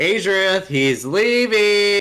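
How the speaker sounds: shrill, very loud, high-pitched yell projected far. Calling out to a party member in the game, yelling out in character. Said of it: "I'm gonna yell out".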